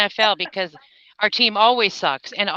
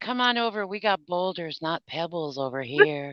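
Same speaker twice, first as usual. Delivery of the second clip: put-on sultry voice, lower pitch, quieter; 3 semitones lower, 7 dB quieter than usual. Guessing what Angela will say next time, speaker imitates Angela in a sultry voice. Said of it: "you were going for your sultry voice".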